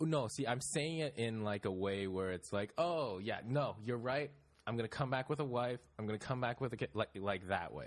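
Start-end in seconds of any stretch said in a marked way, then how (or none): 2.8-6.9 breezy, pitched-up, clearly insincere, not serious tone. Retelling own replies to family urging marriage: retelling mock agreement, not serious. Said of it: "Is I'm not being serious".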